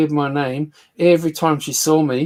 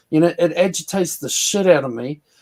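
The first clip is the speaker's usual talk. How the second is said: ordinary talk, nothing marked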